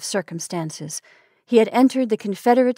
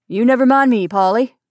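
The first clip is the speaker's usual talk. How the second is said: raised, comforting, steadying, reassuring voice; 3 semitones higher, 5 dB louder than usual. A father answers his daughter, who begs him not to go, reassuringly. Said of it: "said her father reassuringly".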